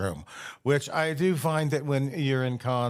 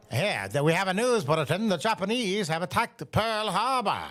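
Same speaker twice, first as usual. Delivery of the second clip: put-on old-timey mid-Atlantic accent, pitched up; 6 semitones higher than usual. Answering a question on how to do mid-atlantic accents, giving a mid-atlantic accent example. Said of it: "I believe that is what's considered to be a mid-Atlantic accent".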